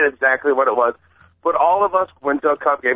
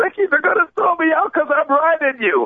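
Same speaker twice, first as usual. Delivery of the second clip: mock, very high-pitched hollered call; 13 semitones higher than usual. Recounting yelling out to Ricky Henderson from the bleachers: retelling a yell. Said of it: "I yell out".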